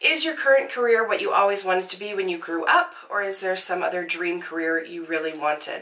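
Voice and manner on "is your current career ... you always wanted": ordinary delivery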